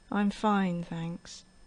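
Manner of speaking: sad, sorrowful, downcast tone. Explaining happy words said in a sad voice, sad voice. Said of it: "happy words but in a sad voice".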